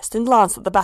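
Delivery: plain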